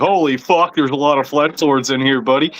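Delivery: normal talking voice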